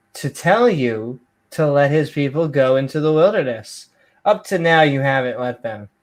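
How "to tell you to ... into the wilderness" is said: ordinary delivery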